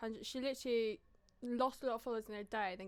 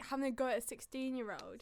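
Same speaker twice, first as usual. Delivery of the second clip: usual speaking voice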